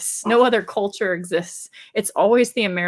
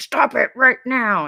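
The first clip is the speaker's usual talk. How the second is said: nasty higher-pitched voice; 5 semitones higher, 3 dB louder than usual. Retelling what was said to the dog: imitating own mean voice. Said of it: "I have to get my mean voice on with my dog".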